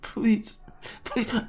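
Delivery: high, desperate pleading in a very high voice. Voicing a character clinging to someone's feet: begging. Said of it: "He's like begging".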